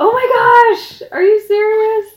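put-on shocked voice. Recounting a ring proposal, acting out being shocked in the moment. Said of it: "I was so shocked".

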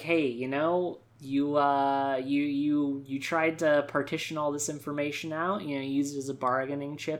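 normal talking voice

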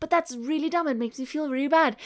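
plain

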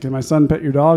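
ordinary talk, nothing marked

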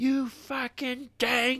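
very high, furious, top-of-the-lungs scream. Telling about a man yelling on the ice, retelling a man's scream. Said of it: "like, just scream".

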